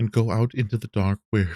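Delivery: ordinary delivery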